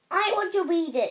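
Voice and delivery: very loud, enraged, furious outburst. Narrator reading Harry's reply to Uncle Vernon about his letter, furious. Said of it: "said Harry furiously".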